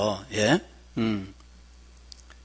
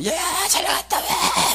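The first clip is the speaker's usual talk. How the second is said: high, drawn-out shout, called out long. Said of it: "막 소리치고 말이죠".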